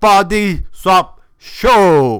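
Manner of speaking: "body swap show" stressed, slow and loud. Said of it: "I mean".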